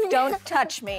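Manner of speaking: put-on rough, harsh tone. Retelling how mom answers dad's greeting: imitating a rough mom. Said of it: "My mom's rough".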